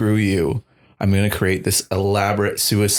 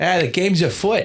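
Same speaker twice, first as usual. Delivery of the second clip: put-on heavy Boston accent, higher; 10 semitones higher than usual. Imagining a detective character with another accent: thick Boston accent. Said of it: "a thick Boston accent".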